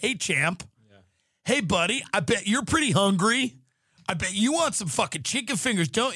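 play-acted chummy, overfamiliar waiter voice. Comparing realtors to a restaurant waiter greeting a kid: overly familiar waiter voice. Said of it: "they're always super familiar with you".

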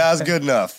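plain

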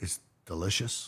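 whispered, barely committing. Answering how Joe says the word: imitating Joe saying delicious. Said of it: "How does he say it?".

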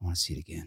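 mock mutter under breath. Retelling his reaction the moment it ended, muttering under his breath. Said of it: "he just goes under his breath".

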